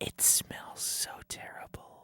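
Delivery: quiet whispering. Describing the ice cream for listeners as an asmr session: asmr whisper. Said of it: "you gotta whisper what you're doing".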